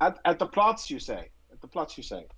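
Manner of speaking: put-on deliberately worst-possible German accent, swooping. Roleplaying the guy in the car answering someone in a hurry, in the worst possible german accent. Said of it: "I try to do the worst German accent I can possibly".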